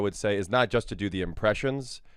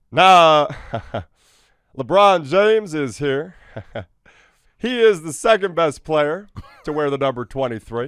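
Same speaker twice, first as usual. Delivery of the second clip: loud, loose, belted delivery, pitched up; 7 semitones higher, 10 dB louder than usual. Doing the third mode of the bit, honoring a basketball team: Barack Obama loose dad-joke voice.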